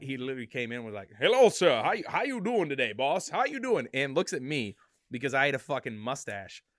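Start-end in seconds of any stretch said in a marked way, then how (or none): 1.2-3.9 loud, swooping, sing-song cartoon-rooster voice, belted big. Retelling an older dishwasher repairman greeting him, Foghorn Leghorn voice. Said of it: "this guy literally was foghorn leghorn to a T".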